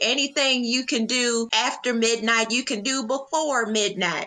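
put-on high-pitched Southern belle accent. Recapping an episode, answering for Whitley about the curfew, in a Whitley imitation. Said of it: "Great accent. Great imitation of Whitley".

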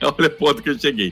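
talking through laughter. Admitting a past mistake to the other speakers, laughing while talking. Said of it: "ele tá até rindo".

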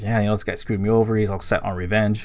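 ordinary talk, nothing marked

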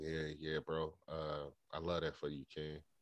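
soft, subtly jealous, understated tone.

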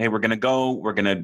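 ordinary delivery

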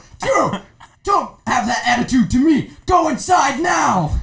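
put-on very high, loud, angry teacher voice. Retelling how a teacher got really mad at recess: imitating an angry teacher. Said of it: "she gets really mad, and she's like".

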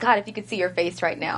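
plain

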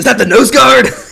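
very loud, high, thrilled, excited screaming. Telling a player how his dad reacted to a tackle: retelling a scream. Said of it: "he screams".

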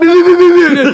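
very high, stuck, stuttering, stammering repetition. Acting out a classmate each time she called on him: imitating a stammer. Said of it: "Он начинал заикаться".

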